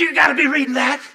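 high, shrill, very loud full-throated screaming outburst. On a bumpy plane, retelling a man screaming at the speaker over his bible. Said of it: "he screams out".

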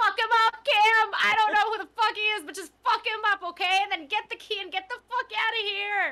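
high, all-out hollered yell. Playing a character in a tabletop game, yelling to another character. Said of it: "I'm just gonna yell".

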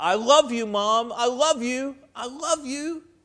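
mock high yelling through streaming tears. Narrating a story, Tony yells to the mom who adopted him; tearful yelling. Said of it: "with tears streaming down his face, he yelled out".

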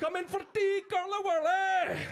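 loud, very high, strong put-on Glaswegian accent. Imagining being Scottish and calling a firstborn in for tea, in a Glaswegian accent. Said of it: "If I was Scottish".

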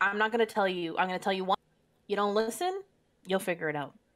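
normal talking voice

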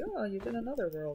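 ordinary talk

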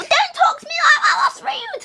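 put-on, very high-pitched girl voice. After deciding to do a girl voice, scold someone for being rude in a Miss Burns voice. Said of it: "let's do a girl voice. Oh, Miss Burns voice".

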